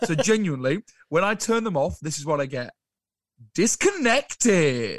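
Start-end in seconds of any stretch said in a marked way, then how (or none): 3.5-5.0 mock eager, bright, swooping American announcer voice. Mimicking what Zoom says when the recording is turned off, imitating excited Zoom voice. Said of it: "she's so excited about it".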